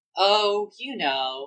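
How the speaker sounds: calm, serene, high voice. Retelling an episode's ending, quoting Usagi: imitating Usagi's serene voice. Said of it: "a very serene voice".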